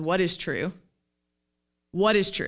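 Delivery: soft yet steady, gentle but firm, insistent tone. Retelling how a friend cut into an anxious rant: imitating a gentle but firm friend. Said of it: "very gently but very firmly interrupts and says".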